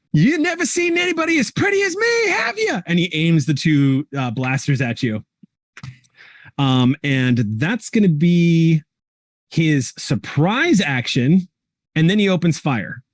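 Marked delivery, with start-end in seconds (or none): 0.1-2.8 high shouted villain voice, taunting, with audible grin. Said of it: "with a big smile on his face and goes".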